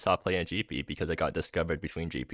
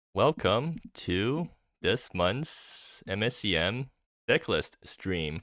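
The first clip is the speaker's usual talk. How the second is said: deliberately slow, drawn-out delivery. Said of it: "Really, really smooth as butter delivery there".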